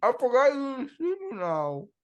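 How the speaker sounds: garbled words through a mouthful. A host brushing his teeth while the others talk, talking with mouth full. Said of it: "don't talk with your mouth full".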